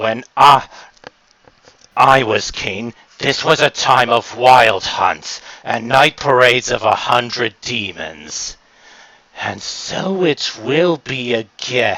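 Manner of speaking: contemptuous, grandiose, menacing, scornful half-whisper. Playing a deposed monster king, scornfully recalling his former glory and vowing its return; menacing half-whisper. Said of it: "as the former king of ha- Halloween Town, and the boogeyman appears before you. / uh, the boogeyman seems to be looking at that thing in with if contempt. / And he whispers, / you can't exactly tell t".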